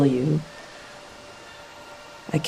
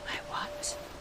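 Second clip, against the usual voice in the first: soft, hushed whisper. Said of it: "Why is he whispering?".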